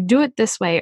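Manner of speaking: plain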